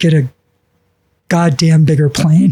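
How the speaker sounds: put-on whisper. Retelling how a man turned and gave his assistant an order, imitating a whisper. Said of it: "he whispers to whoever his assistant is".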